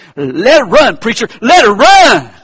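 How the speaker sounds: booming, swooping, loud, high holler. Retelling a joke where someone in the back yells out: imitating someone yelling out. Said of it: "somebody in the back yelled out".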